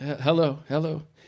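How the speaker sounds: sleepy, half-awake, stumbling groggy voice. Retelling waking up to a phone call: imitating a groggy voice.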